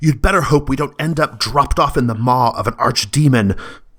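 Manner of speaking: high screaming, alarmed. Narrating a scene, a character screams back in reply: screaming. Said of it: "And then she screams back".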